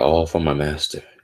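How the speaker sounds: plain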